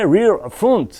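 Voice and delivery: English accent, rear and front said with English pronunciation. Explaining the wheel arrows, saying the English labels in an English accent. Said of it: "Je vous le fais avec l'accent anglais".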